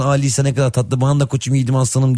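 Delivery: ordinary delivery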